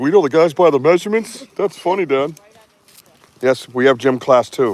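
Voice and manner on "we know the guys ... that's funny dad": put-on voice of a fourteen-year-old boy in puberty. Retelling a fourteen-year-old's reaction: imitating a fourteen-year-old going through puberty. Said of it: "Fourteen-year-old going through puberty. He's like".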